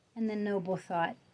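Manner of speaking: ordinary delivery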